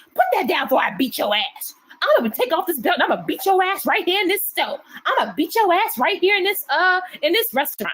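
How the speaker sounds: play-acted furious voice, pitched high. Describing moms out in public with their kids, imitating an angry mom.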